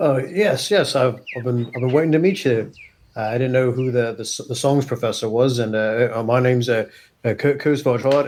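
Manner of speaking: very nervous, jittery, halting, stammering, tripping over words. Playing a character meeting the songs professor: acting nervous in character. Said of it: "he's kind of very nervous here".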